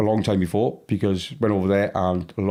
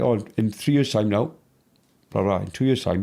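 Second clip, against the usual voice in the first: ordinary talk, nothing marked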